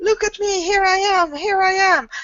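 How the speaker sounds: very high, mock shout.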